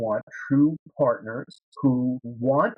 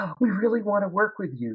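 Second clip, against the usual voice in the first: high, overeager little puppy-dog voice; 7 semitones higher than usual. Coaching listeners on making the ask, the speaker shows one kind of energy: like a little puppy dog. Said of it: "like a little puppy dog?".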